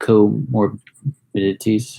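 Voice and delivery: "comorbidities" deliberately slowed, whispered, drawn out.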